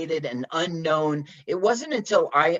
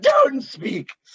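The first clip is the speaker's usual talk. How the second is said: mock overly dramatic feminine delivery, higher; 9 semitones higher, 4 dB louder than usual. Retelling a movie scene, imitating an overly dramatic woman. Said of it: "overly dramatic woman".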